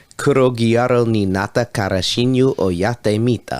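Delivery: Japanese words spoken with an Italian accent. Saying the anime's japanese title aloud, in an italian accent. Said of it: "Why in Japanese did you use an Italian accent?".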